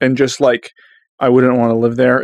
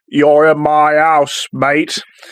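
put-on slow, unhurried old British man's drawl; 3 semitones higher than usual. Describing a horror movie antagonist: imitating an old British man. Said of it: "old British man who's just like".

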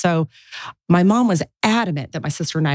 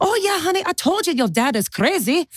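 put-on Filipino accent, very high-pitched; 12 semitones higher than usual. Retelling what a woman told the speaker, Filipino accent. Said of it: "with her Filipino accent".

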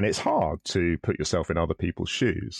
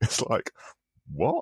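ordinary talk, nothing marked

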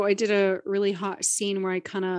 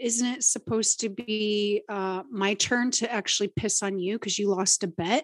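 usual speaking voice

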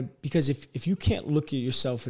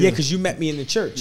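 ordinary talk, nothing marked

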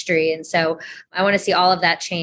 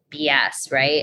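ordinary talk

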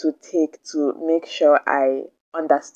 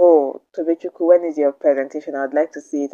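ordinary talk, nothing marked

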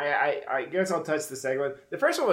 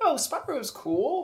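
very high, touchy, defensive voice; 14 semitones higher than usual. Mocking how another speaker praised a game: imitating a defensive tone. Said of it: "Like that kind of defensive".

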